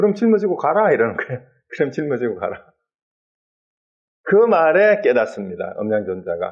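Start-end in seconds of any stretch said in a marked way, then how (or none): 0.0-0.9 high, witty, teasing tone. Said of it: "아주 위트가 있어요".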